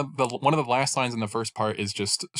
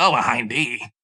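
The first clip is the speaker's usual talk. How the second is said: put-on nasal gravelly voice, slower, louder; 2 semitones higher, 6 dB louder than usual. Showing how they voice a Snake line, Solid Snake impression, more gravel. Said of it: "nasally Solid Snake?".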